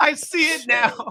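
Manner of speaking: high, loud, laughing delivery.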